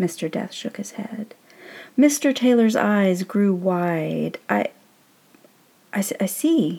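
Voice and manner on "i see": faltering, stammering speech. A man just introduced to a newcomer replies: stammering. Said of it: "he stammered".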